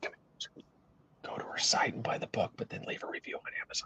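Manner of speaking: conspiratorial, hushed whisper like a TV host. Imitating the recipe secret guy from fast food videos: imitating a whispering TV host. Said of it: "why are we whispering?".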